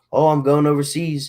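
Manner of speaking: ordinary talk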